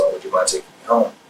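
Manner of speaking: ordinary talk, nothing marked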